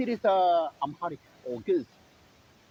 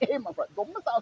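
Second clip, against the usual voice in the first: high, loud sarcastic mock tone. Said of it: "this is sarcasm".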